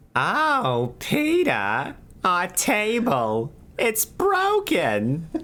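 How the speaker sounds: very high, swooping, stretched-out delivery, oh drawn out. Taking your own try at the line in front of others, a little Mulaney voice. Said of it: "You got a little Mulaney at the end there".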